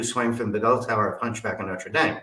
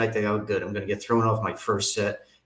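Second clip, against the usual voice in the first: ordinary talk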